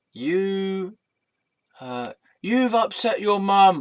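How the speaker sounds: high, slow, loud, aggressive, accusatory bark.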